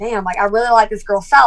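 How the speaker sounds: ordinary talk, nothing marked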